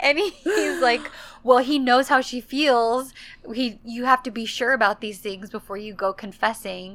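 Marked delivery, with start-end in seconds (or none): none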